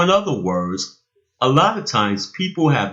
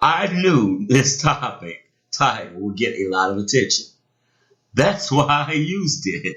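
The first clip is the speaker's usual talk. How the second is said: chuckling, breaking up laughing partway through the line; 2 semitones higher than usual. Introducing an episode topic to listeners, laughing while talking. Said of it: "can't stop laughing".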